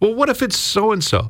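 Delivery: high-pitched, mocking, anxious fretting tone.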